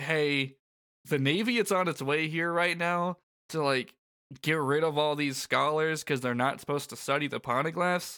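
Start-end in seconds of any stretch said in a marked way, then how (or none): none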